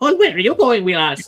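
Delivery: put-on booming, very loud, high-pitched Irish accent. Retelling an audiobook's sudden character voice: Thom Merrilin Irish voice. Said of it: "like, Irishman out of nowhere".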